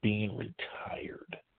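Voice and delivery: slow, unvoiced whisper, said aside.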